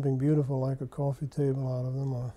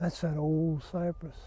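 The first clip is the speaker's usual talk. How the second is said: slow, deeply reverent, awed voice; 3 semitones higher, 5 dB quieter than usual. Retelling what an old man said about a cypress: imitating a reverent voice. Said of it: "in this really reverent voice".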